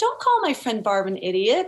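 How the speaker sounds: ordinary delivery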